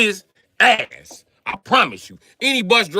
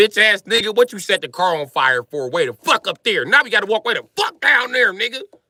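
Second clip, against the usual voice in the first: acted-out, furious, angry scolding rant. Retelling scolding own reflection after the car burned: imitating own angry scolding. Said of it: "I seen my reflection and was mad at me".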